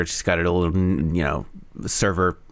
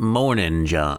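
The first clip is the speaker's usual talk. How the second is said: leaning a little into a light southern drawl. Voicing Irma's morning greeting to John in a story, doing Irma's southern drawl. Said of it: "is that a southern accent?".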